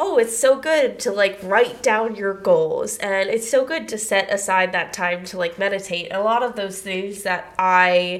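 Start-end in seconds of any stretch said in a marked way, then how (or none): none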